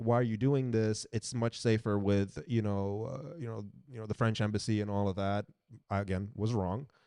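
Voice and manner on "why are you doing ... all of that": ordinary delivery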